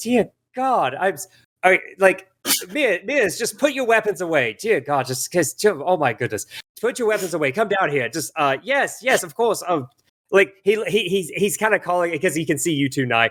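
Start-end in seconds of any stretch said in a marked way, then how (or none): 0.0-9.6 stumbling, flustered, pleading voice. Voicing the boss, who is in the middle of surrendering: voicing the flustered boss. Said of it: "he's like".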